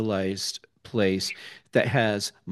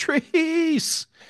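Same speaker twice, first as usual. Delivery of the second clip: high-pitched yell. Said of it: "we'll just start yelling".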